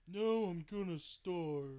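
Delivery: very loud, booming cartoon voice, high, slow, drawn-out. Quoting a line that played in the speaker's head: Patrick Star voice. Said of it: "Sorry, I said Patrick Starr".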